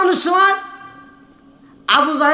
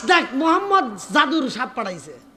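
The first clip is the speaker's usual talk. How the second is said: ordinary delivery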